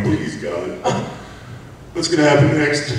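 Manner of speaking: high, desperate sobbing, crying and pleading. Recalling lying curled up after a girl was hit with a bottle, imitating own past crying plea. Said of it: "curled up in the fetal position crying".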